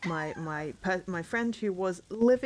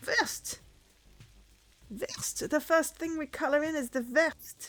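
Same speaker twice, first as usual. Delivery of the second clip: breathy voice with a slight French accent; 9 semitones higher than usual. Reading out a coloring task: a bit of a French accent. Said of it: "I'm saying it with a bit of a French accent".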